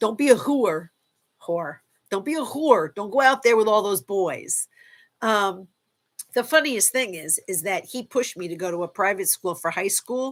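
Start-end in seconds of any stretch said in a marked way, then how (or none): 0.0-4.7 put-on Bronx New York accent. Recalling how her dad protected her as a girl: imitating dad's bronx accent. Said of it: "I'm going to try to do my, my dad's best uh, Bronx accent".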